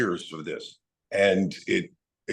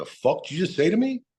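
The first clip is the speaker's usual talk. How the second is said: pitched-up Jersey way of talking; 9 semitones higher than usual. Retelling a phone call, the speaker answers him in a put-on Jersey accent. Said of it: "in a Jersey way".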